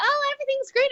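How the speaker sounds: mocking, sarcastic imitation. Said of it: "just like".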